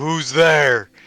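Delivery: demanding, challenging call-out. Voicing a character who calls out after a rat is struck: said really loud. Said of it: "I say it really loud".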